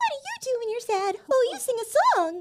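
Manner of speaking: very high, sing-song princess voice.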